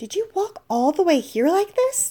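astonished, disbelieving tone. Seeing her shivering and strangely dressed, the narrator asks, dumbfounded.

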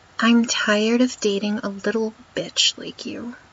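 little stressed in a whisper. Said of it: "Emphasis on little".

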